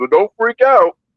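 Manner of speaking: mock frightened, jittery, high, nervous little voice. Imitating someone on a phone call: imitating a scared voice. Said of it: "He's so scared that he's like".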